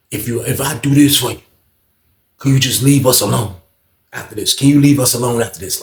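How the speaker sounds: earnest, serious, pained, hurting delivery, repeated. Retelling a story, quoting a man who got serious; imitating a serious tone. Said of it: "Like he got real serious".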